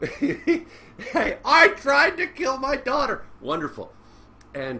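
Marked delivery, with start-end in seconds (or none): 0.0-3.2 very high, slow, whiny blubbering cry. Mocking someone's inaugural speech by imitating him crying in a high voice. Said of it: "starts crying like a little bitch with a high voice".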